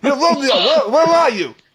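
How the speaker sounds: put-on Brooklyn accent. Joking about how Shakespeare would sound, in a Brooklyn accent. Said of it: "It's Shakespeare from Brooklyn".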